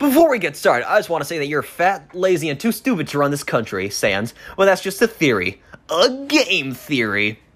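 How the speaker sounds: high, swooping show-host voice. Reading an old election script in a MatPat impression. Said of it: "Can I do my MatPat impression?".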